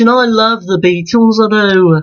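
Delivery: put-on Liverpool Scouse accent. Speaker doing a run of voices, now switching into a Liverpool accent. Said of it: "now it's time for a Liverpool accent".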